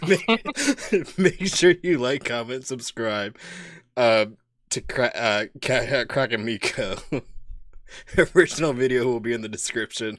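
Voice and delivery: slow talk broken up by laughter. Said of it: "I'm trying to make it through this".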